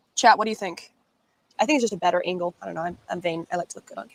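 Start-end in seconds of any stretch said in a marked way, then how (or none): 1.6-4.2 mumbled, indistinct and hard to make out. Answering chat about the camera angle, mumbling. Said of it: "you're mumbling".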